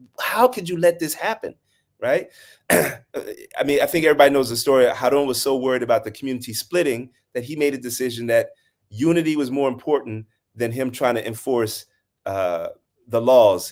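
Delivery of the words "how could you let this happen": put-on exasperated, frustrated, high scolding tone. Retelling a story, the speaker acts out one man's frustrated scolding of another. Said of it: "he's just like so frustrated".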